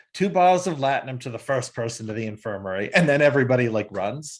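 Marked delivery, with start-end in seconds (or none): none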